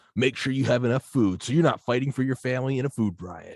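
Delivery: high-pitched radio ad announcer voice, selling tone. Retelling a radio ad heard with mom: imitating a radio ad announcer voice. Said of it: "car advertisements on the radio in the early two thousands".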